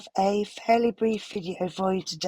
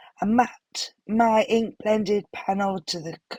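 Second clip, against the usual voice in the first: voice giving out and fading into a whisper. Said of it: "Sorry for my voice".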